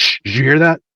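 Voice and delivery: high-pitched shushing voice. Narrating a voice heard through an open parlor door, Styles shushing. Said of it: "shushing it".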